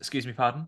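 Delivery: feigned confused tone. Showing the de-escalation trick of feigning confusion: pretending not to hear. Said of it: "pretending you didn't understand".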